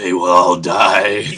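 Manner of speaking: put-on pack-a-day fifty-year-old man's voice. Joking about a character speaking in full sentences when alone, fifty-year-old chain smoker voice. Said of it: "he sounds like he's like a fifty year old man".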